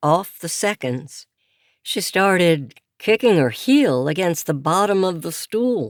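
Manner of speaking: ordinary delivery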